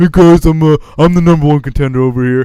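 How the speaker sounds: very loud, dopey, blaring delivery. Retelling a wrestling promo, imitating Roman Reigns like a moron. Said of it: "Roman's just standing there like a moron going like".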